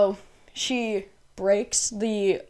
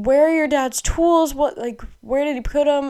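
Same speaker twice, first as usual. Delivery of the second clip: loud yelling, acted out; 7 semitones higher, 6 dB louder than usual. Telling a story, the speaker mimics the mom, retelling her yelling. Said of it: "The mom is yelling".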